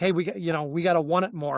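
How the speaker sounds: normal talking voice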